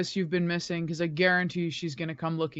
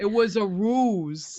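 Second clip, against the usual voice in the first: put-on New Jersey accent; 3 semitones higher, 4 dB louder than usual. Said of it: "so I'm gonna do the damn accent".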